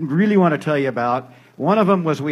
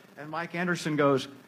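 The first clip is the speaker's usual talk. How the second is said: plain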